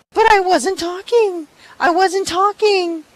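put-on high, shrill child voice. Retelling a girl's protest after she is given a behavior mark, shrill Lila imitation. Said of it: "She's got this shrill little voice".

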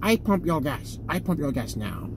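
put-on Chinese accent. Imitating the woman who runs his gas station, put-on chinese accent. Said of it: "Why did I use a Chinese accent?".

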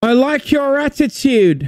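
very high put-on Northern English accent. Friends quoting a Nintendo game's voiceover line in a Northern English accent. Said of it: "It was just like Northern English".

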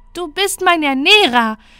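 syrupy, sugary sweetness, very loud and high. Leon answers his pleading father, with a grin. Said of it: "mit einem zuckerverklebten Grinsen".

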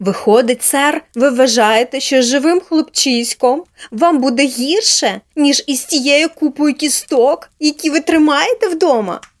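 cross, indignant, angry, loud, high-pitched voice. Narrating a girl questioning a gentleman about taking in a boy, angrily. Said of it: "Сердито піднявши підборіддя, запитала Поліанна".

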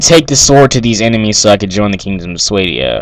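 normal talking voice

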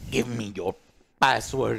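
put-on low, botched, failed Spanish-French villain accent. Retelling a movie villain's line, trying his accent badly: failed try at the villain's accent. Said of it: "I can't do his accent".

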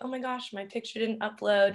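plain

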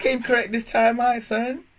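very high, loud, hyped excited voice.

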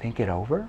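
confused, puzzled, not-understanding tone. Repeating a prospect's 'think it over' back in a confused questioning tone. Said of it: "You can lean in a confused tone and say".

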